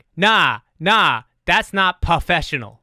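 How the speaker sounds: shouting, put-on accent, word professional mispronounced. Retelling a lady on her phone, mock yelling into a phone. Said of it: "she's yelling into her phone".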